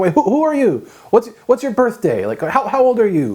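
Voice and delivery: mock stunned, baffled, high dumbstruck tone. Speaker retells how a friend's friend interrogated him, in a mock dumbstruck voice. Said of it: "with this kind of dumbstruck voice".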